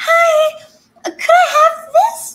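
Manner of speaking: very high, very loud, sugary put-on voice. Speaker retells ordering at a bakery, in a really high-pitched voice. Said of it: "I stepped into this really high pitched voice".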